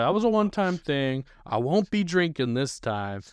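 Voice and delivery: play-acted guileless, harmless-sounding voice, high. Retelling how a friend talked before the trip: imitating him sounding innocent. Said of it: "he sounded like the most innocent guy".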